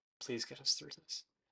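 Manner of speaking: weary, exasperated, rushed, breathy whispered murmur. [name] looks up to the sky and speaks, exasperated [name]. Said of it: "She's like an exasperated Italian grandmother".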